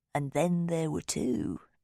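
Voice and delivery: campy, silly yet creepy spooky ghost-story voice. Thomas speaks to the narrator as Rosamond closes the door: silly, creepy voice. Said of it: "Thomas says in a silly, creepy voice".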